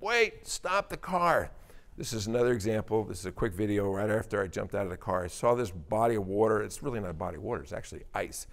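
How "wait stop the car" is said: high, slow, urgent yell. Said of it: "and I yell".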